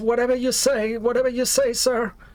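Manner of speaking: very high, terrified, scared-sounding voice. Ordered to tie themselves up, answering the one giving orders, super scared and pleading. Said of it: "seem super scared".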